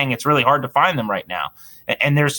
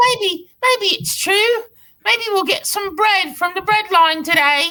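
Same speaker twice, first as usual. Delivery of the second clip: put-on very high, piping little British boy voice. Joking about a losing football team as a pitiful little boy: Tiny Tim voice. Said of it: "Tiny Tim".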